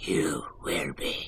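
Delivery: creepy, gravelly, rasping whisper. Comparing Grover's and Yoda's voices, the speaker does a creepy gravelly Yoda voice. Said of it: "the gravelly voice when Yoda gets creepy".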